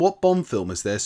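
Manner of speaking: ordinary talk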